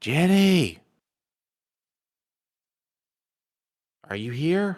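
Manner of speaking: high, projected whisper-shout. A player's character calling out to find someone inside, whisper shout. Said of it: "kind of whisper shout".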